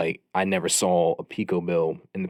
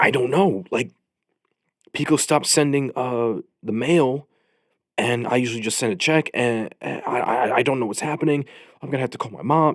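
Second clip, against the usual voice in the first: mock flustered, high, anxious, on-the-verge panicky rambling; 6 semitones higher, 4 dB louder than usual. Retelling a roommate who walked out of his bedroom panicking, imitating his panic. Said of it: "he was starting to have like an anxiety attack".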